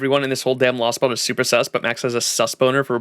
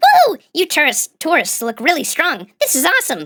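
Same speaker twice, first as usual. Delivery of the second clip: squeaky put-on fairy voice, much higher; 4 dB louder than usual. Speaker voices the party-goer fairy greeting tourists in a tavern, squeaky fairy voice. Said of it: "use the squeaky voice".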